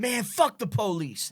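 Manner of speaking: unhurried, weighty, drawn-out, deliberate, emphatic delivery. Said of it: "[name] was just like".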